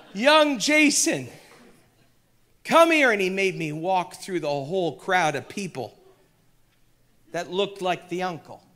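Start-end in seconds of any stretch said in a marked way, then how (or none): 0.2-3.1 put-on booming Irish accent. Retelling how a man called him back as he tried to escape, big old Irish voice. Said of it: "I hear his big old Irish voice".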